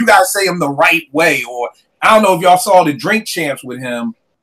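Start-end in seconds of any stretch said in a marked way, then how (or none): none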